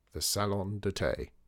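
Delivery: ordinary delivery, nothing marked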